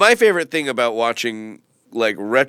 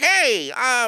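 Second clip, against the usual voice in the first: weird, higher-pitched early cartoon voice; 12 semitones higher than usual. Showing how a cartoon rabbit sounded at the beginning: early Bugs Bunny voice. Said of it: "he kinda sounded like this".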